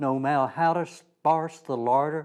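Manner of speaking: usual speaking voice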